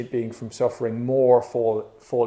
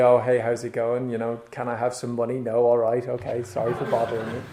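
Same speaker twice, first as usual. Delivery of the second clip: put-on half-hearted, pleading tone. Retelling own fundraising phone calls: imitating own half-hearted phone ask. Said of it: "I'd dial a number half-heartedly".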